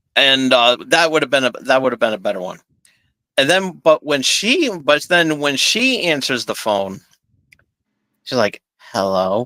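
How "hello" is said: put-on irritated, annoyed voice pitched lower. Retelling how a character answered the phone: imitating an annoyed hello. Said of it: "She sounds like one of my ex-girlfriends, annoyed by me".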